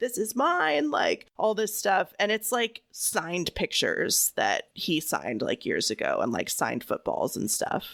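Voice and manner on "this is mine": high, furious, angry screaming. Retelling how OJ screamed at memorabilia dealers in a Vegas hotel room, retelling OJ screaming. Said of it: "OJ is like screaming at them like".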